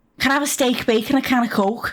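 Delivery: poor, off-target attempt at a Geordie accent. Trying out a regional accent in conversation; attempted Geordie accent. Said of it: "I want to say Geordie".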